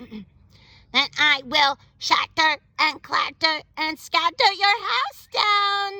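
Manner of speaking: mechanical robot voice. Reading the robot's threat in a picture book: robot voice. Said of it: "you wanna keep doing robot?".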